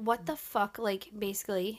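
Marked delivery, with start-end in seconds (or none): 0.0-0.8 put-on furious, angry exclaiming outburst. Retelling what mom said after a C on a test: imitating furious mom. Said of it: "my mom was furious with me".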